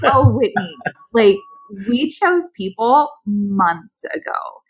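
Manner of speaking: slow, drawn-out, mocking, scornful tone.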